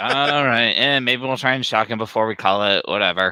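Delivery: put-on can't-be-bothered, bored-stiff tone. Imitating a movie doctor who sounds bored: imitating a bored doctor. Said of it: "He sounds like he's bored out of his mind".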